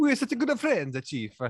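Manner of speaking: put-on Italian accent. Talking with others about a time travel movie, in a mock italian accent. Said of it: "He's like an Italian guy".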